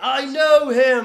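very high, very loud, thrilled and delighted. Retelling a movie scene where he learns he must fight the Hulk: imitating excited Chris Hemsworth. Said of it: "And he's so excited".

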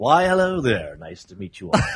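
smooth, polished podcast announcer voice. Guest introduced to the panel, greeting everyone: podcast announcer voice. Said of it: "he brought his podcast voice".

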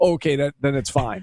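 mock sarcastic tone. Retelling a text reply to a friend about an umpire: retelling a sarcastic reply. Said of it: "I was being sarcastic".

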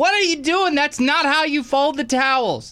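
voice pitched way up, high. Speaker does a second impression of his wife for a friend: imitating his wife. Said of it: "This is another impression okay. of my wife".

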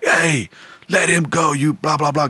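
slow, stretched-out, screamed call. Recalling a concert, the speaker retells people pointing at him and yelling, retelling people screaming. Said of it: "screaming like".

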